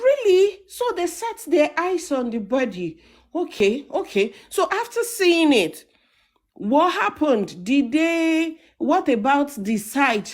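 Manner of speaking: mock astonished, eager tone. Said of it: "you can hear the surprise in his voice".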